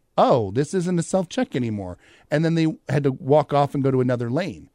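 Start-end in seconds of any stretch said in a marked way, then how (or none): none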